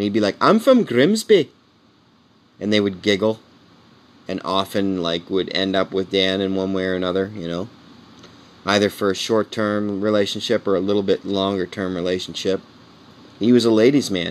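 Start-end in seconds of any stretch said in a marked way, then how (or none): 0.4-1.5 high, slow, thick Scottish brogue. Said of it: "because they'd hear his Scottish accent".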